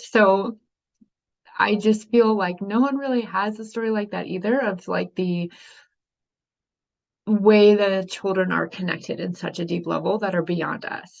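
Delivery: a little emotional, unsteady, wavering voice. Recounting pregnancies and Dylan's birth one year after a loss, a little emotional. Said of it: "I'm just getting a little emotional".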